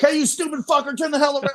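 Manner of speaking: mock outburst, very high, rattled off fast, excited. Imagining the outtakes where he blurts at a kid, imitating an excited outburst. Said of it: "got excited there".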